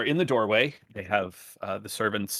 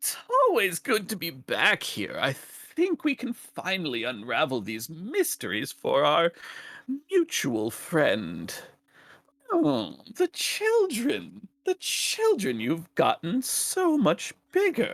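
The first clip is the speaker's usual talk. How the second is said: high, swooping, sing-song whining tone; 8 semitones higher than usual. A visitor stepping through the threshold of your home speaks, whiny voice. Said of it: "with that same sort of whiny voice".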